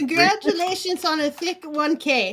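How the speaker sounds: awful Irish accent. Reading a line aloud as asked, in a Lucky Charms guy Irish accent. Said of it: "Lucky Charms guy".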